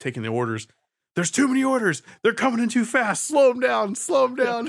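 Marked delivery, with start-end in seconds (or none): 1.1-4.7 shrill, very high-pitched yelling. Retelling the cook shouting at the order-taker: imitating a cook yelling. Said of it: "I heard him yell at the lady".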